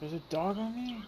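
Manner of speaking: high, loud startled yelp.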